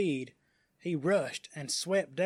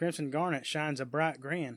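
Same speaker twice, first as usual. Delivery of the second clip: plain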